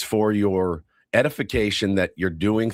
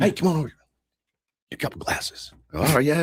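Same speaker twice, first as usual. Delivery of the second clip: real fast, eager, pitched-up, rattled-off motor-mouth chatter; 7 semitones higher than usual. Retelling meeting a friend from fantasy camp, imitating Ben Varela talking fast. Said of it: "Talks real fast".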